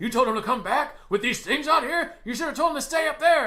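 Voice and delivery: high, loud, freaked-out, panicking yelling.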